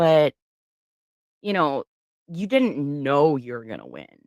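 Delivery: snide, snarky, sarcastic sing-song delivery. Retelling what a deputy said to her: imitating a snarky tone. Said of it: "literally snarky with me with that, that kind of tone".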